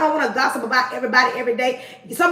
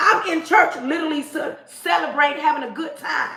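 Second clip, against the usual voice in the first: ordinary delivery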